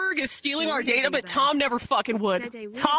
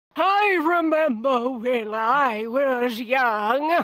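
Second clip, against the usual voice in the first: acted elderly man's voice; 4 dB louder than usual. Describing an old man's voice, then doing old man Morgan Freeman. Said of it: "I can do old man".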